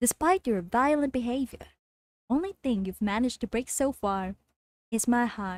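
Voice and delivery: machine-like, robotic AI tone. Trying a Portal 2 line without a voice effect: GLaDOS impression.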